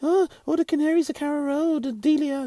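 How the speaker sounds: very high, very loud put-on voice. Recounting an impressionist's bit, Daniel Farke impression. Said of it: "my impersonation ain't as good as his".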